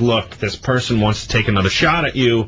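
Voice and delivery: normal talking voice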